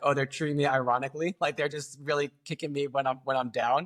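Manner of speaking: ordinary talk, nothing marked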